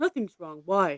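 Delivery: mimicked flat monotone. Retelling how someone answered after the speaker came home from work, imitating a monotone. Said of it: "they're very like monotone".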